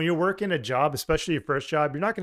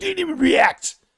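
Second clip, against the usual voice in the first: shrill, very high, loud put-on smoker voice; 7 dB louder than usual. Doing an impression of a friend who didn't react: Jade impression as a smoker. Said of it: "That's my Jade impression".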